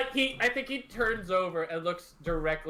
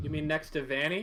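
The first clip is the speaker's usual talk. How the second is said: plain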